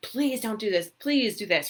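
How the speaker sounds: tense, desperate, fearful pleading. Acting out a tense, fearful spouse: imitating desperate pleading.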